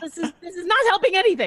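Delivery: babbling in a high panic.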